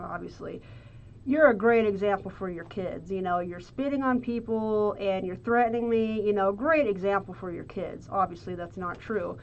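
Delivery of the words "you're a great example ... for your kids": ordinary delivery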